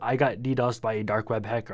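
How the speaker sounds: normal talking voice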